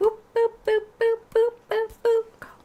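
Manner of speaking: very high, squeaky, silly boop sound effects.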